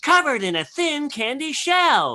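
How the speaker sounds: very high, swooping cartoon candy character voice. Doing a friend's favorite voices from a repertoire, starting with the yellow M&M voice. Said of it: "M and M sounded like uh".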